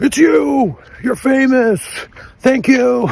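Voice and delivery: shrill, very high, thrilled, excited shout. Recounting what a woman on the street yelled at them: retelling a yell. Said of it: "just yelled at me".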